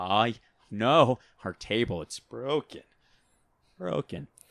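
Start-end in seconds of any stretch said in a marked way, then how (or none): 0.0-2.8 put-on halting quirky voice, getting louder. Showing a celebrity voice for a skit idea: Jeff Goldblum voice. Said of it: "Jeff Goldblum would be like".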